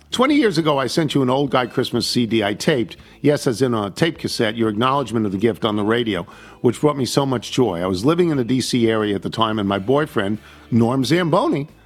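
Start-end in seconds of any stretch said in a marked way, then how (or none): none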